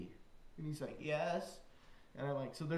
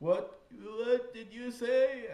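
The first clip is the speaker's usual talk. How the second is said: bad put-on British boy accent, much higher; 6 semitones higher, 5 dB louder than usual. Retelling what a little British boy seated beside him asked, in a bad British accent. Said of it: "I can't do his accent at all".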